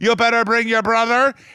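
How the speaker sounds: loud, high shout in an Irish brogue. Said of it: "That was a good accent".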